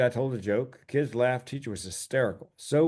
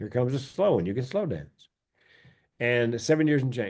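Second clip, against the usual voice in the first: plain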